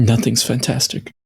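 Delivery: dour, gloomy, glum tone. Answering a character's "Fantastic" in character: dour, gloomy tone. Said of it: "You are quite dour today".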